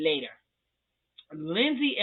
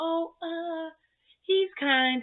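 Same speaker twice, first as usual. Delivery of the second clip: high, halting, unsure put-on voice. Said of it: "she's like".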